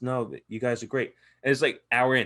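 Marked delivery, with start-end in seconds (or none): 0.0-1.1 put-on whisper. Telling how JB came in to say hello, imitating JB whispering. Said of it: "He's whispering like a fucking church mouse".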